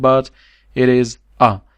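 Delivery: stress on it is a.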